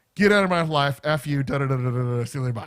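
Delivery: angry, fed-up, furious ranting tone. Retelling hanging up on a caller: retelling his own angry words. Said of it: "I was pissed".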